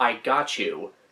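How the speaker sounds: ordinary talk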